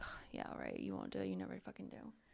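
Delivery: breathy, barely voiced, offhand, dismissive whisper. Retelling what a woman said to a man, as an offhand comment. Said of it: "kind of like an off comment".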